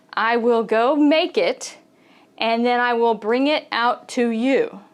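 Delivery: ordinary talk, nothing marked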